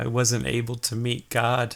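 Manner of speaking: played as a man dying. Game master voicing a fatally wounded man looking up at the police: dying Toddy Cathy voice. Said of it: "he looks up at you guys, ... and he goes".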